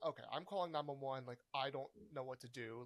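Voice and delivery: normal talking voice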